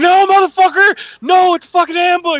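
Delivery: all-out shriek, very loud and high-pitched. Retelling watching a Navy seals show, imitating screaming at the screen. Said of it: "screaming at the fucking screen".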